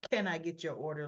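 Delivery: snobby, snotty tone with little sniff. Retelling how Jocelyn takes a customer's order: imitating Jocelyn's snobby tone. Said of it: "Little snobby snottiness".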